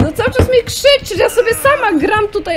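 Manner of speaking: high, loud, annoyed complaining shout.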